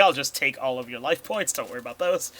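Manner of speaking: ordinary delivery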